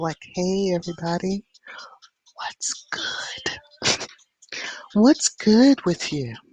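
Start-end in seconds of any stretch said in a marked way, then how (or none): 0.3-3.6 put-on, breathy late-night host voice. Showing how a midnight show would sound: put-on midnight show voice. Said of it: "a midnight show and really put on my voice".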